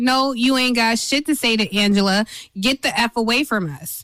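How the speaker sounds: ordinary talk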